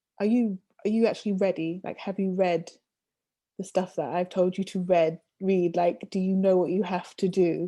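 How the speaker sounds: plain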